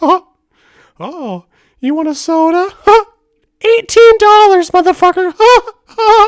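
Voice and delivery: high, loud, squeaky cartoon voice. Retelling shaking people down on a trip, doing the Mickey Mouse voice. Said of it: "doing the Mickey Mouse voice".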